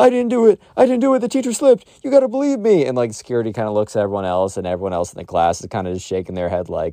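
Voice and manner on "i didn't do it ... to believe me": put-on very high-pitched, screaming child's voice. Retelling how a kid was taken away by security: imitating a kid screaming. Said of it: "the Minecraft kid the whole time is screaming".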